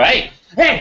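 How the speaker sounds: high, loud urgent shouting.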